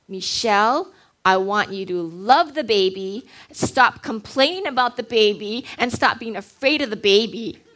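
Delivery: put-on big, thundering, booming voice. Retelling what the Lord said to her in that moment, booming voice of the Lord. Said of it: "in this booming voice".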